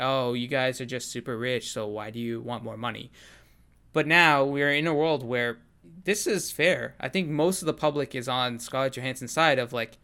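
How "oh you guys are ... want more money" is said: ordinary delivery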